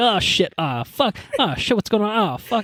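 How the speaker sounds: frantic, high-pitched swearing, all in a panic. Retelling a film scene where the villain runs around his tower: imitating panicking Saruman. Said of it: "dude's just panicking".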